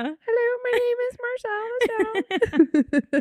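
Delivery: very high and very slow voice. Speaker talking about Marcel the Shell videos does Marcel the Shell voice. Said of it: "start talking in a high-pitched voice".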